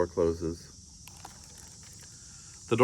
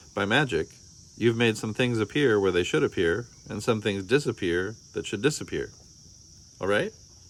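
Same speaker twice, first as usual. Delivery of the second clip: usual speaking voice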